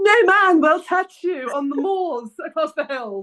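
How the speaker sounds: put-on British accent. Mocking the other speaker's line with a put-on british accent. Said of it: "Why was that in a British accent?".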